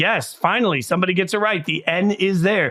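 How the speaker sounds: ordinary talk, nothing marked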